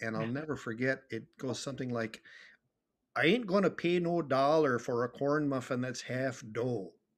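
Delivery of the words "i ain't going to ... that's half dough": put-on Minnesota accent, put on. Retelling how a playwright demonstrated the local accent, Kevin Kling's Minnesota accent. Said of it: "the Minnesota accent".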